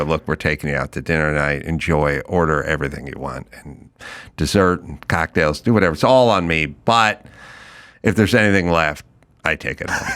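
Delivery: mock dead-straight, no-nonsense, matter-of-fact delivery. Recounting own words to two people that night, in a straight monotone delivery. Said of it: "I deliver things in a straight monotone way".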